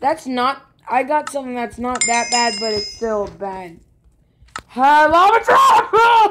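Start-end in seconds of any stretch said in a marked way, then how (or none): 4.8-6.3 very high, shrill, loud screaming. While playing a zombie game together, one player is screaming. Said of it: "Stop screaming".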